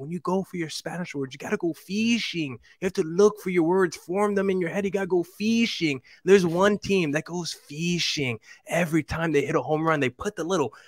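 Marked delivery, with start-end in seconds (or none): 0.0-6.0 put-on thick Argentine accent, pitched up. Speaker recalls their high school Spanish teacher's advice, thick Argentine accent. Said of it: "She had like a very thick, like Argentine accent".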